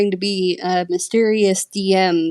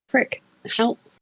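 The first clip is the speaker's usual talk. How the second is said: quiet, soft, higher pitch; 4 semitones higher, 4 dB quieter than usual. Retelling how the dm reacted while searching for words, said quietly. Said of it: "he just quietly goes".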